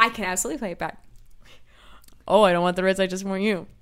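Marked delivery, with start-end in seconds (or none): 2.3-3.6 put-on, parroted teasing voice. Playing back an argument as a tape recorder, mocking imitation of a spouse. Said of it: "That was you doing me".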